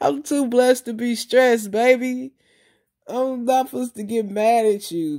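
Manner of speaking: chuckling through words. Speaker retelling the reply he gave while he kept laughing: retelling a laughing reply. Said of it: "and I was just laughing".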